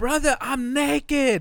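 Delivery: very high, shrill, loud screeching yell. Retelling a story, the speaker imitates Andy screaming from the shower. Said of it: "he's just screaming".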